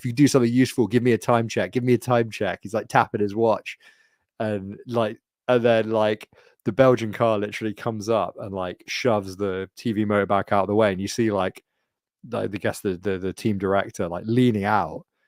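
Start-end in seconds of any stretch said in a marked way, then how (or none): none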